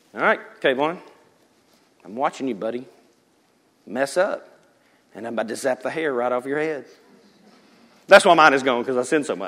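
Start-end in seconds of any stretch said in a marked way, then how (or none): 0.2-6.9 threatening, watchful, menacing god-like overlord voice. Acting out the threatening Jesus people usually picture: imitating a threatening Jesus. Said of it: "Usually the Jesus you get is this".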